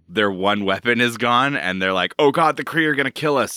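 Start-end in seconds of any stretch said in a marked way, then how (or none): 2.1-3.6 mock frightened, panicked, terrified outburst. Summarizing a comic plot, voicing the Skrull empire, mock-terrified. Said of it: "the Skrull empire is like Super terrified".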